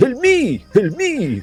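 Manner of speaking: put-on crying out in a high French accent. Narrating a cry for help from the top of a tower, in a French accent. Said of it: "You hear a French accent".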